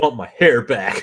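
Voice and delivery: mad, sore, angry demanding voice. Imitating someone who lost his hair and got angry: imitating an angry Bruce Willis. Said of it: "he just got angry".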